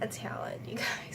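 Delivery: unvoiced whisper.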